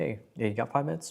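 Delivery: subtle, easy, unpushy casual tone, lifted pitch. Demonstrating an 'I care' tonality when asking for five minutes: subtle, non-aggressive. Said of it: "an I care tonality, right? Like very subtle. You're not aggressive".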